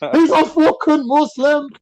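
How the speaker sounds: mock outburst, very high and drawn out. Retelling the girlfriend's auntie running through the living room: imitating the auntie's outburst. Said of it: "She ran through the living room going".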